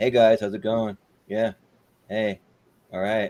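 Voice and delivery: flat, totally monotone, dead level, no rise. Mocking an actress as totally monotone: imitating Kristen Stewart, monotone. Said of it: "totally monotone".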